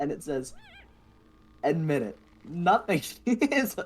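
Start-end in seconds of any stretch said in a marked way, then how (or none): 1.6-3.9 giggling, high, slow, words barely getting out. Reading a silly post aloud to another speaker, laughing while reading. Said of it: "I can't read this without laughing".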